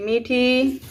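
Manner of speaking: loud, carrying calling voice.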